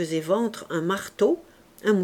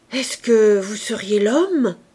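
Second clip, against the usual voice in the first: raised, shuddering exclamation; 6 dB louder than usual. A peasant, eyeing a newcomer up and down, suddenly asks him: crying out with a shudder. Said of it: "il s'écria avec une sorte de frémissement".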